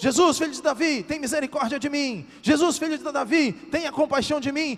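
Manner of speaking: very high, desperate shout, crying out. Retelling a story, the speaker acts out a man from it, retelling a desperate shout. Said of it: "começou a gritar e a gritar desesperadamente".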